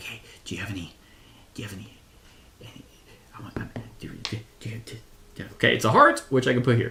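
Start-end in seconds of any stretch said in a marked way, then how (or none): 0.0-5.4 whispered mumble, stumbling and trailing off. Acting out whispering to the flowers in a game: mumbling. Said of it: "I just kept mumbling".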